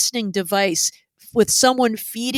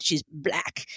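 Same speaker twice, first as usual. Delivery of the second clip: mock scornful, disdainful, breathy whisper of contempt; 4 semitones lower, 9 dB quieter than usual. Retelling how he said it about her: imitating a disdainful tone. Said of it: "he says it with such disdain".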